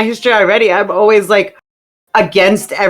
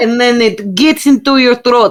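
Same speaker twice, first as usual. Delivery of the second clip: higher, slow, drawled mock Russian accent. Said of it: "Explain to him how it is that you do the Russian accent".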